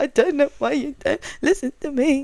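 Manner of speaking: put-on high, tearful crying voice. Retelling a driver's team radio message, imitating a crying driver. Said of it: "it's just the way he said".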